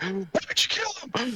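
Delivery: very high, pushy bad-cop voice. Retelling a joke about interrogating an android: imitating a bad cop interrogation. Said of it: "the whole bad cop thing".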